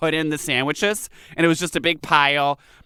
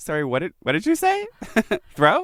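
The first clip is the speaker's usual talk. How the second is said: put-on, politely confused, baffled tone with swooping pitch; 4 semitones higher than usual. Retelling how people react to a strange pronunciation: imitating a puzzled listener. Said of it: "they're just kind of like".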